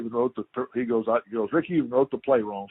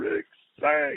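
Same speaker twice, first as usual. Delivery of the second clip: put-on yelling, higher pitch; 4 semitones higher than usual. Retelling how the coach yelled at him after a sack: imitating the coach yelling. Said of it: "I still hear him over there yelling".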